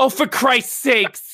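put-on very high-pitched South Boston accent. Retelling being walked in on, the speaker imitates their mother's South Boston accent. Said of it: "in her South Boston, Randolph, Massachusetts accent goes".

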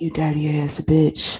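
whispered. Retelling a voicemail someone left: imitating a whisper. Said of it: "Shorty left me a voicemail whispering".

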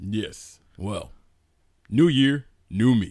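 put-on radio announcer-style delivery. Opening a podcast episode with the cohost, putting on a radio announcer voice. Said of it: "This is my radio voice".

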